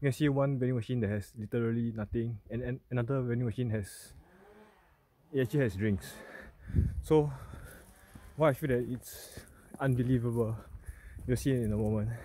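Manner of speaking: words squeezed out between breaths, breathless, winded. Filming while on a hike, short on stamina: out of breath. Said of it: "so I'm out of breath".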